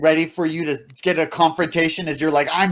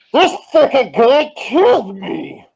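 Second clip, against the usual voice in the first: funny intercom speaker voice, higher and louder; 8 semitones higher, 6 dB louder than usual. Voicing an intercom box that speaks up in the tavern: funny-sounding intercom box voice. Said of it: "funny sounding, like an intercom box".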